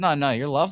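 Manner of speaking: normal talking voice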